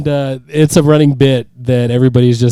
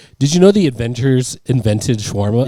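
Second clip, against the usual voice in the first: usual speaking voice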